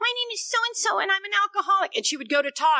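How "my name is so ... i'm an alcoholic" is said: put-on girl's voice, much higher. Recalling a girl who introduced herself when the speaker was new, imitating a girl's voice. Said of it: "she talks like this".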